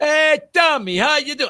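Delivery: very high, loud, over-projected, New York sound. Speaker imitates a New Yorker greeting them from inches away, retelling a loud over-projected greeting. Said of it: "You don't have to project quite that much".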